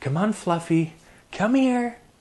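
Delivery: very high, upbeat, coaxing, encouraging call. Showing how to call a dog after taking a breath: positive tone. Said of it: "when you give them a positive".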